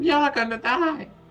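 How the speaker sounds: squeaky put-on voice. Joking about being shrunk by a reduce spell: squeaky voice. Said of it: "squeaky voices".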